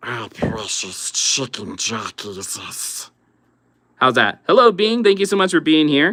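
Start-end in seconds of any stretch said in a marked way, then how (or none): 0.0-3.1 slow, drawn-out, breathy whispered character voice. Answering a chat request to say chicken jockey: Gollum voice. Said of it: "I'll do Gollum".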